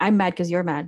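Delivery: ordinary talk, nothing marked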